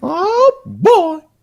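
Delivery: high-pitched, loud squeaking voice. On stream, trying out a voice before reading a story: Mickey Mouse voice. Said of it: "I'm going to do this in a Mickey Mouse voice".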